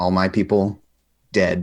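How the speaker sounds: very flat, toneless voice with no pitch variation. Voicing Little Fox in the story being told: very flat tone. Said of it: "Little Fox just says in a very flat tone".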